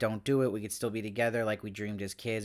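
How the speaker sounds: ordinary talk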